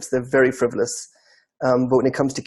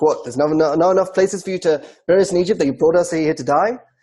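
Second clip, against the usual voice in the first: mocking, very sarcastic grumbling voice; 3 semitones higher than usual. Retelling the people's complaint about being brought out to the desert: imitating a sarcastic complaint. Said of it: "It's very sarcastic".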